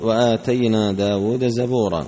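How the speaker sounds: usual speaking voice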